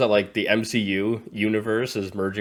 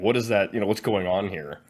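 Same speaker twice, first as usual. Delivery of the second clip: usual speaking voice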